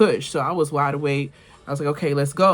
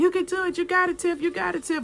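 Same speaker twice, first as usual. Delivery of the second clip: very high, cheerleader-style cheering; 3 dB quieter than usual. Retelling how her mom encouraged her during her first childbirth, imitating mom's cheering. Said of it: "she literally was my cheerleader".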